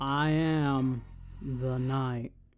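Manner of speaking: put-on bored, low voice. Showing how lame a read of the knight line could be, in a boring Ben Stein impression. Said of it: "like if you did a Bill Stans".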